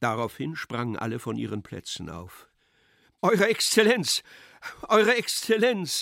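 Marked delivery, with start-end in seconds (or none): 3.2-6.0 very high, loud raised outcry. Pseldonimow, his mother and guests around the General cry out, shouted. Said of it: "schrien Pseldonimow".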